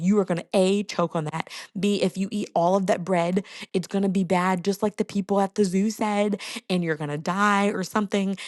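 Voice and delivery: ordinary talk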